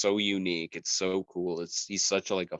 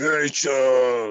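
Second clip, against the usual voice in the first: very loud, high superhero bellow, name stretched long; 6 semitones higher, 8 dB louder than usual. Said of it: "and my Batman sounded like".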